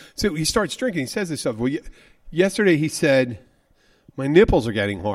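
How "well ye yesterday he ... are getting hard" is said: plain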